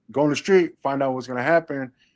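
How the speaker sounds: normal talking voice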